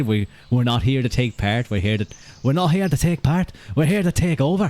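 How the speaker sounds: put-on failed, poorly done Dublin accent. Quoting what Conor McGregor said, in an attempted Conor McGregor Dublin accent. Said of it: "That's not a Dublin accent".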